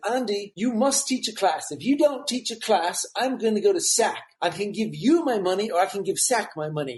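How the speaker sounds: put-on British accent, Englishman's voice. Retelling what a class member from England said: imitating a British accent. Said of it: "he was from England with his British accent".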